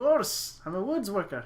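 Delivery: put-on Scottish accent. Role-playing a woods worker answering a question about his axe, in a Scottish-style voice. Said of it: "Scottish kind of voice".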